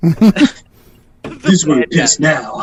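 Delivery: put-on dumb, skater-movie style punk kid voice. Imitating how the others sounded in someone's head: punk skater kid voice. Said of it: "like punk kids from a skater movie".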